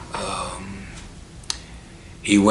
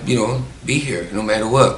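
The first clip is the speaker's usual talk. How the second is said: usual speaking voice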